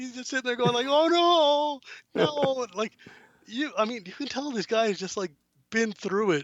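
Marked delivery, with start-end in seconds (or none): 0.9-2.7 put-on terror, much higher, louder and slower. Describing a passenger at the ship's prow in goggles, acting out terror.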